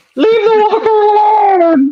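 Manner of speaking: very high, slow sobbing scream, alone stretched. Describing how most people will react, doing a mock crying scream. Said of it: "screaming, "Leave it alone!" and crying".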